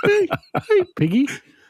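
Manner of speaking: cartoon frog puppet voice, very high pitched. Doing a different impression for another speaker: Kermit the Frog voice. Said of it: "Kermit the, uh, Frog here".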